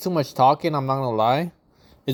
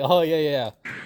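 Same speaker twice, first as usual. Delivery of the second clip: mock laughter while talking. Imitating how he reacts while laughing: imitating someone laughing. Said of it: "He's laughing like".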